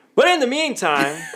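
very high-pitched, loud, booming segue voice. Moving the podcast on to its welcome: loud segue voice. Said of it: "that was really loud".

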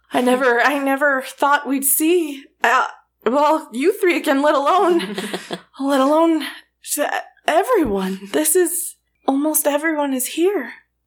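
put-on emotional, choked voice. Voicing Bilric as he gathers the three adventurers, Bilric, a little choked up. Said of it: "he's getting a little choked up".

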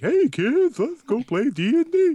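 goofy, very high, slow, drawn-out cartoon voice. Suggesting another way to say something, the speaker switches into a silly cartoon voice. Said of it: "say in a silly cartoon voice like".

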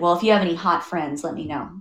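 put-on snide, smart-alec, snarky tone. Retelling what a date said while walking out: imitating a snarky remark. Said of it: "in a snarky way".

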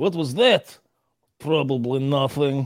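put-on Russian-accented English. Describing a guy who always speaks english with a russian accent, imitating a russian accent. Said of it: "English with a Russian accent".

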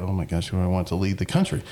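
ordinary delivery

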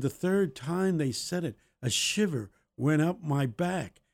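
ordinary talk

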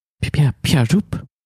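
high, halting, stammering hand-puppet voice. Voicing a freed creature making a cloth puppet talk: stammering hand-puppet voice. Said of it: "like he's playing with a hand puppet".

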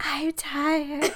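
soft, high half-whisper, said aside. Retelling what was said during the intro: imitating own half-whisper. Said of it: "I was whispering".

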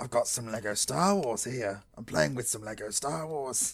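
put-on sinister demon child voice with cockney accent. Playing with lego, putting on an evil cockney child demon voice. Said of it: "We do evil cockney child demon voice".

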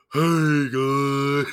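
casual, relaxed voice, copied from another speaker. Showing how a friend does her impression of his voice: imitating a friend's impression of him. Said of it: "she would do her voice of me".

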